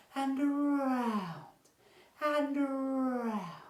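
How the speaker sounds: soft gentle voice, very high, slow and drawn out. Leading listeners through a movement exercise, very nice gentle voice. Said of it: "a very nice gentle voice like this".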